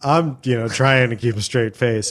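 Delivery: normal talking voice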